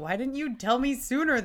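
high-pitched, acted indignant, offended, put-out tone. Retelling a woman learning of a relationship kept secret from her, mock-offended. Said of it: "She gets all offended".

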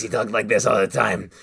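put-on kobold smoker voice. Recalling their kobold rogue from a one-off, showing how he talked: Velk's smoker voice. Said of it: "Who had a smoker voice".

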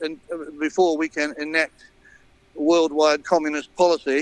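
usual speaking voice

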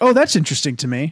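ordinary talk

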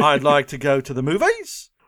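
upspeak, movies rising like a question. Teaching to lilt the voice at the end, rising at the end like a question. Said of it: "you just lilt your voice like everything's a question".

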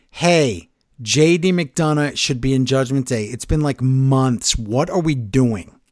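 ordinary delivery

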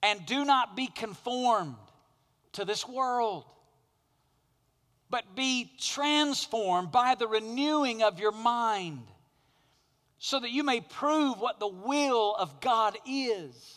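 impassioned delivery.

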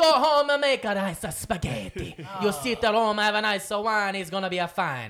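put-on Italian accent. Joking about Italy's response, a speaker talks in a stereotypical Italian accent. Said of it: "That's a good accent".

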